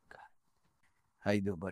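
emotional, voice catching. Greeting a friend in the chair after listing people who love him: getting emotional. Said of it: "Now I'm gonna get emotional".

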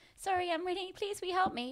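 put-on very high, helpless, pleading lost little-girl voice. Retelling asking strangers to park the car: retelling a put-on little-girl-lost plea. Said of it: "Play a little girl lost type thing".

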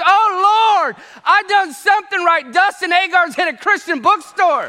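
high screamed outburst with drawn-out oh. Retelling how a former teacher reacted on seeing him: imitating someone screaming. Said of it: "throws her hands up and screams".

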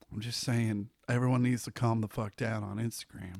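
deliberately quiet talking. Mid-discussion with another speaker, talking quietly for effect. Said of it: "I'm talking quietly for effect".

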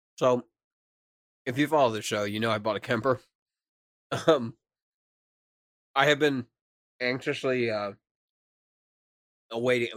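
talking while chewing, mouth full of food. Host eating on the show, telling the folks about a purchase, talking while chewing. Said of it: "Sorry, I'm chewing".

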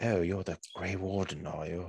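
put-on seductive femme fatale voice. Imitating a game character's voice after describing it: seductive British Morrigan voice. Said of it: "like a femme fatale sort of thing, very mysterious".

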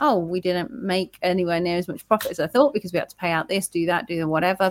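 ordinary delivery

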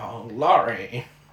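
put-on fragile, aged, frail old man voice. Imitating an old sheriff and his wife: put-on old man voice. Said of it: "that sounds like my impression when he's young".

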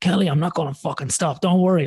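put-on high-pitched yell, shouted across a distance. Recalling shouting back to kelly while being urged to finish, retelling shouting back. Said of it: "I was shouting back out to her".

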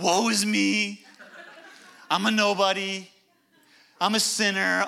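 very slow, dragging drawl, every word drawn out. Describing people who talk negatively about themselves: Eeyore voice. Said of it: "you sound like Eeyore from Winnie the Pooh".

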